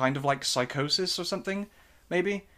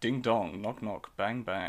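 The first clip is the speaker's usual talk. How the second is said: put-on soft, low, gravelly voice with English accent; 4 semitones lower, 6 dB quieter than usual. Speaker recalling a film character's manner, in a Super Hans gravelly, sexy English voice. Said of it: "real like gravelly like sexy like English voice".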